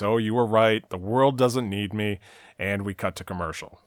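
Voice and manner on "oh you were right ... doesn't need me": usual speaking voice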